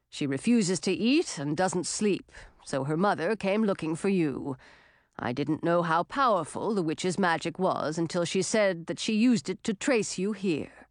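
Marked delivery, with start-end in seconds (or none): none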